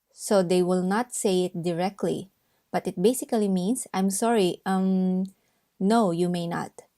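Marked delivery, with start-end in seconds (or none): none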